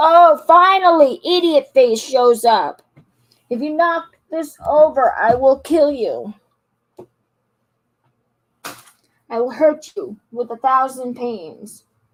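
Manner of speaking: loud, irritable, whiny complaining. Streamer without nicotine, snapping at someone who just showed up, whiny. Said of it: "I'm a whiny little bitch".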